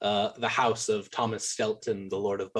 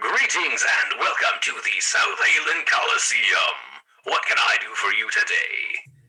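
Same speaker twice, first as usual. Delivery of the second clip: programmed, machine-like robotic announcer voice; 7 dB louder than usual. Voicing a Warforged ticket teller at the Coliseum: robotic voice. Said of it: "robotic pramming, programming".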